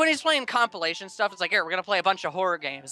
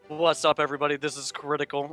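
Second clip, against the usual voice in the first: low, flat, deadpan delivery; 4 semitones lower than usual. Imitating the YouTuber the others praise for deadpan humor: Critical impression. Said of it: "you mean the guy that talks like this?".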